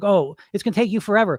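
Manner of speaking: taunting, mocking bully voice. Acting out the inner voice that bullies you: mocking bully voice. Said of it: "that bully voice like".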